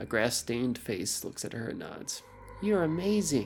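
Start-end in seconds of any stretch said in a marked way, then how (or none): 2.6-3.5 exclaiming outright with pitch raised. A boy speaks to Gwen after she checks on the children: exclaiming. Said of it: "the other boy exclaims".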